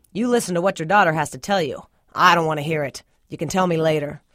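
ordinary delivery

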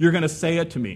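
usual speaking voice

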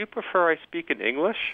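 put-on very sweet high voice, nearly accentless English. Retelling a woman offering to switch to English, imitating a very sweet voice. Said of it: "in a very sweet voice".

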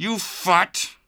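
high, forced out through clenched teeth. Narrator reads a grieving man's words, still gripping the other man's arm, through clenched jaw. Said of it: "Hefner said through his clenched jaw".

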